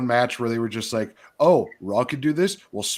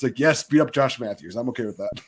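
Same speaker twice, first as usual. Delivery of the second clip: normal talking voice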